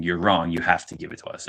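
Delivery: normal talking voice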